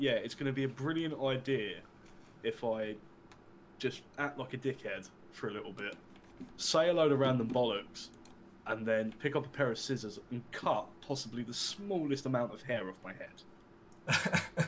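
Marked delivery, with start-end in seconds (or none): none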